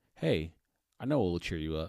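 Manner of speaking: brightening up. After a man thanks her somberly, she tries to cheer him up, perking up. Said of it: "perking up".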